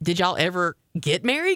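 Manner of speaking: plain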